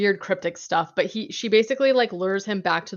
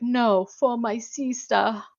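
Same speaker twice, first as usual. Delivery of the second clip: put-on British accent, very slow and drawn out; 4 semitones higher than usual. Retelling a movie character's line: British accent. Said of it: "pretty good accent for this movie".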